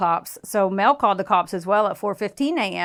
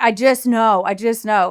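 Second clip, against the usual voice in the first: put-on fake sobbing, slower and louder; 2 semitones higher, 5 dB louder than usual. Retelling a story about a missing woman, imitating a man's fake bawling. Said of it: "he's bawling his eyes out".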